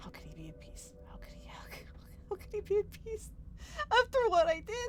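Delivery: anguished, angry outburst building from hush to high cry.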